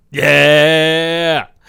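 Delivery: very loud, overjoyed, joyful cheer. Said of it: "I'm jumping for joy right now".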